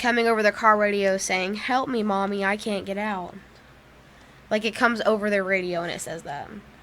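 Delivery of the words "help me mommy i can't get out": put-on ghostly, spooky little girl voice. Telling a ghost story about a bridge, quoting the voice on the car radio: ghostly little girl voice. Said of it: "they hear a ghostly voice of the little girl".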